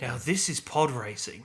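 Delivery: muttered quietly, mumbled under the breath. Joking about a line heard in a trailer: muttering under his breath. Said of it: "under his breath you could hear him say".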